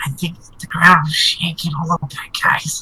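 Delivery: whispering in a put-on voice. Voicing Goose, who quietly tells the group the ground shakes: whispering in character. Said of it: "Goose is gonna whisper".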